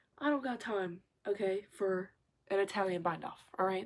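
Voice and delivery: ordinary talk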